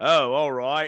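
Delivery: brief lurch into a bad, wavering Australian accent. Retelling how James Coburn sounds in The Great Escape: imitating James Coburn's wavering Australian accent. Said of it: "occasionally goes".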